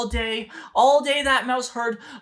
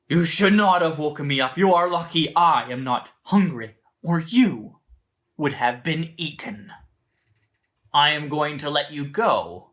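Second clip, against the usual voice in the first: very low, deep, weighty storybook lion voice; 8 semitones lower than usual. Storyteller gives the lion's reply to the little mouse, in the lion's voice. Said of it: "And the lion says".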